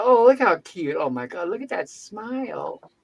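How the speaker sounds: put-on gushing, swooping, sing-song baby-talk cooing. Retelling how the nurses fussed over a baby: imitating nurses cooing over a baby. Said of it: "and then go back to".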